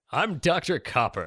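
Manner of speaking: no-nonsense character voice. Asked for the character's canon voice, the speaker answers in Doctor Copper's canon voice. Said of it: "what's your cannon voice".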